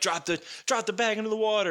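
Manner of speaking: high-pitched, barking shout. Retelling an order shouted during a tense scene: imitating someone yelling. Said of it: "we've got Batman yelling at him".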